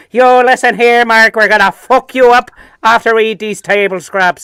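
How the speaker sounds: put-on Dublin accent. Acting out a street gang threatening in the kitchen: put-on Dublin accent. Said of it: "I had the wrong accent there".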